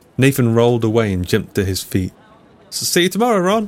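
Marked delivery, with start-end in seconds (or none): 2.7-3.7 high-pitched shout. A narrator voices a man calling back as he runs away: shouting. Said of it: "he shouted as he legged it".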